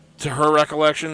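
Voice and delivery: ordinary talk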